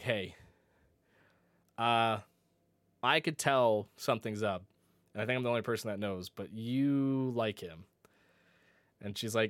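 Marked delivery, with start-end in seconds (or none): none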